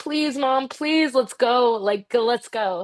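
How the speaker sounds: repeated, pleading begging. Retelling begging mom to go to wrestling class: imitating own past begging. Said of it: "So I begged my mom".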